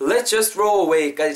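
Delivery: very slow, linked let's just throw away. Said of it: "자연스럽게 붙일 수 있겠죠".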